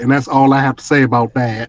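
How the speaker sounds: usual speaking voice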